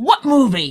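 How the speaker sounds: acted, cross, annoyed, high-pitched angry voice. Arguing, the speaker mimics the other person's reply from last night, imitating an angry question. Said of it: "You got so mad".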